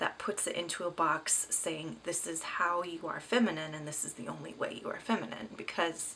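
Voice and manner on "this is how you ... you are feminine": normal talking voice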